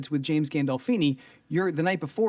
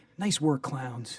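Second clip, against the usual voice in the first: warm, earnest, sincere voice, quieter; 2 semitones lower, 4 dB quieter than usual. Retelling a colleague's odd compliment after a scene: imitating Owen's warm, sincere voice. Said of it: "really earnest and really sincere and in a warm voice".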